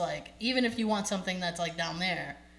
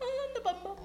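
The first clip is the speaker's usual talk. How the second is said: very high, small little voice; 4 dB quieter than usual. Quoting a favourite cartoon character's line: imitating Elfo's high little voice. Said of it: "he has a high little voice".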